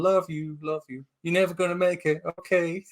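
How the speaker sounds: sweet gentle tone. Retelling a film scene after describing screaming arguments: imitating Kristen Wiig speaking softly. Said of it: "softly going".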